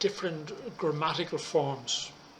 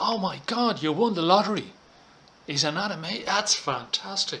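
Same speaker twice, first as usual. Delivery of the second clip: amazed, delighted, surprised, excited disbelief; 3 semitones higher than usual.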